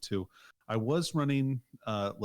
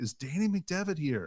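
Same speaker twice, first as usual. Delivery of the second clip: high, raised yelling; 6 semitones higher than usual. Retelling arriving late as Bob calls out: imitating someone yelling. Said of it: "Bob's yelling".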